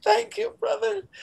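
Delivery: very high, emotion-choked voice. Thanking a coworker in front of an audience, choked up. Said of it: "I'm getting choked up".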